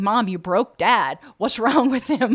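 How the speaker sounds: giggling and laughing through the words. Voicing the dog's reaction to Dad laughing, giggling while talking. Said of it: "even giggling like I just did there".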